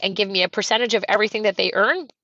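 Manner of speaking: ordinary talk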